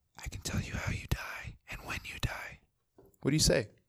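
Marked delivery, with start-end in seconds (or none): 0.3-2.6 mysterious, secretive close whisper. Posing a hypothetical, acting out a mysterious man: imitating a whisper. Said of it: "he just whispers in your ear".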